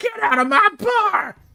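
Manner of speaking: very high, shrill, shrieking furious scream. A game master voicing a salamander NPC at the players, screaming. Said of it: "she screams at you and says".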